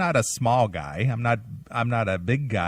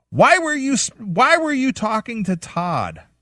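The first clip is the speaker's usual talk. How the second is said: very high, shrill, scaled-down half-scream; 12 semitones higher, 6 dB louder than usual. Retelling how a boss confronted them over talking to Todd: imitating a boss screaming. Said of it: "screaming, and I'm only, like, at a third of the level".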